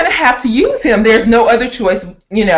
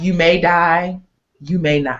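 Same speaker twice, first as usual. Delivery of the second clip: low, emotionless, flat, level monotone; 5 semitones lower, 5 dB quieter than usual. Retelling Pandora's answer to his question, imitating Pandora's flat monotone. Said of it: "no emotion, just flat, mon- monotone".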